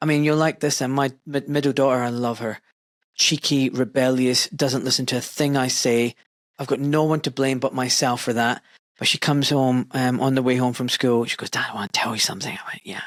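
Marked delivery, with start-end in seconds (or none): 11.5-12.5 very hushed, low and quick voice. A father retells his daughter talking to him on the way home from school, imitating a very hushed tone. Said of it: "Very hushed tone".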